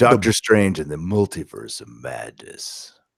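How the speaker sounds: deep movie trailer announcer voice. Saying a movie title, in a movie announcer guy voice. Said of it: "movie announcer guy voice".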